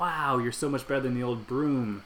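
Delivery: ordinary delivery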